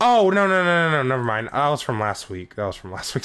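glum, let-down, dejected, depressed tone. Realizing the win was from last week, sounding depressed. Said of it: "Sorry, I sounded so depressed".

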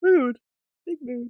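yawned out, mid-yawn. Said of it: "I say as I yawn".

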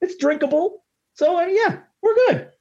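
silly put-on voice in a very high register. Podcast host reviewing a beer, speaking in a high voice. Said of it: "do the rest of the podcast in this high voice".

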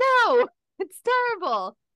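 loud, high-pitched, blunt delivery.

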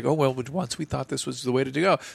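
put-on casual, offhand, unapologetic, remorseless delivery. Mocking how the other speaker just said it: imitating the other speaker's tone. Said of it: "You say it with such, like".

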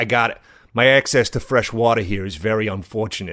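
put-on strong heavy Boston accent. Imitating a man the speaker heard talking about nature: heavy Boston accent. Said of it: "in like a heavy Boston accent".

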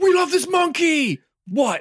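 mock yell pitched way up high and drawn out. Describing a movie scene where the character shouts: shouting as Jay. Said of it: "Jay shouts".

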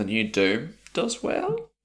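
well said with a rising question-like tune. Reading a line about the new Doom as written, rising question intonation on well. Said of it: "I've said that as a question".

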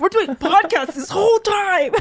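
bossy mock impression.

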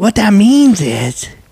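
put-on high, loud, slow, drawn-out grandpa voice.

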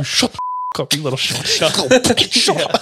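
acted furious hushed voice. Retelling a father scolding kids during church: imitating an angry hushed scolding. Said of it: "you have to be, like, as indiscreet as possible".

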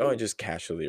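ordinary talk

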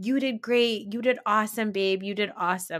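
mock, fond, put-on baby-talk tone. Retelling a wife praising her husband in the car home: imitating talking to a child. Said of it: "the way that I would talk to my child".

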